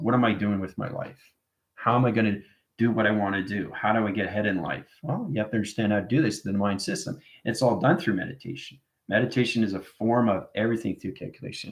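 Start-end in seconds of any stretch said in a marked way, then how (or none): none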